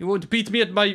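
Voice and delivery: put-on South African accent, slipping in. Trying a line and noticing it sounds South African: South African accent. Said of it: "this sounds South African".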